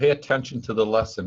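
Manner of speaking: ordinary delivery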